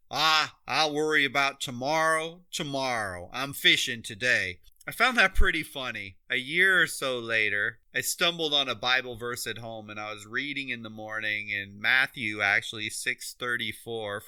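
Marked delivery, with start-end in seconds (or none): 0.1-4.6 very thick, heavy small-town Southern Georgia drawl. Retelling a country guy's reply to a gas station clerk: very southern georgia drawl. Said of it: "with a very Southern Georgia drawl".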